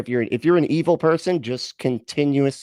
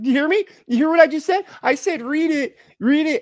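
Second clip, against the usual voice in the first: acted, hyped-up, thrilled, pitched-up excited voice. Mocking another speaker who just said "read it": imitating someone excited. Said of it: "he's, like, so excited right now".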